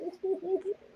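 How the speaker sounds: high-pitched, soft, mocking "ooh". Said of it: "I was like".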